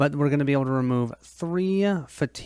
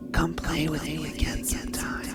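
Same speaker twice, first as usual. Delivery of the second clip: whispered right at the ear; 2 semitones higher, 4 dB quieter than usual. Narrating an adventure, a voice whispers in your ear as you leave the forest: whisper. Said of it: "a voice whispers in your ear".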